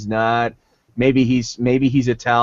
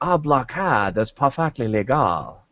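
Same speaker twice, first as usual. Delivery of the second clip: mock Chinese accent. Retelling a movie scene, quoting a Trade Federation official, stereotyped Chinese accent. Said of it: "What does that sound like to you?".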